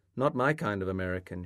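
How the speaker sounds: usual speaking voice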